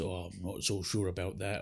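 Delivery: very deep, low, soft, rumbling put-on voice. Retelling a man's remark to a woman, in a very deep voice. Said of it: "in a very deep voice goes".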